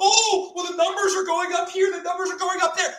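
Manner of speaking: high-pitched, mocking, whiny voice.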